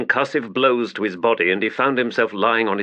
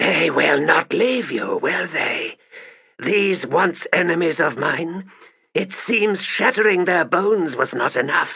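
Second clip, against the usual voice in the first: rough rasping stage whisper, pitched up; 6 semitones higher than usual. Reading a novel aloud, a character whispering to a fallen warrior: rasping whisper. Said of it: "In a rasping voice, she whispered".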